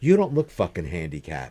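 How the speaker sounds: mock angry, scolding old woman voice. Retelling how an old lady confronted him in a parking lot: imitating an angry old lady. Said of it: "she was mad".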